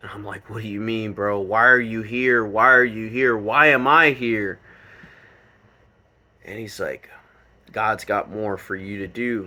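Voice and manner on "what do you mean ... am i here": mock sobbing and bawling. Retelling your own questions to him while bawling your eyes out, retelling crying questions. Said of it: "I'm bawling my eyes out".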